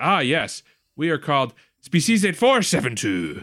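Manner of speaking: slow, high-pitched, unhurried Scottish drawl. Quoting Boothby saying what his species is called: Scottish accent as Boothby. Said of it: "Why is he Scottish?".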